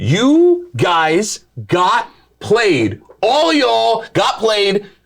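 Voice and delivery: slow, drawn-out, gloating tone.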